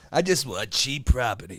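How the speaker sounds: text-to-speech computer voice. Repeating another speaker's line in the new TikTok voice: Rocket TikTok voice. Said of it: "You sound like that new TikTok voice".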